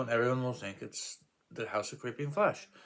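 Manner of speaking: usual speaking voice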